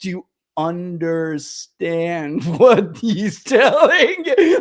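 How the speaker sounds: very slow, word by word. Retelling how Bannon asked the others a question: imitating Bannon talking slow. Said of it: "Bannon was talking slow".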